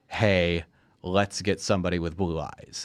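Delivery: normal talking voice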